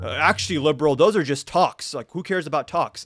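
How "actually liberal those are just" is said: ordinary delivery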